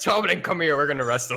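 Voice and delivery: put-on acted hungover character voice. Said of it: "I'm hungover and I'm like".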